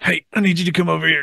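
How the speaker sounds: pained. Lying on the ground after snapping his ACL, calling a coworker over, retelling an odd-sounding call. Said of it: "why you sound like that?".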